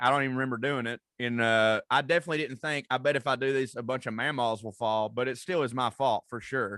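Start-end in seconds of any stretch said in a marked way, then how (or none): none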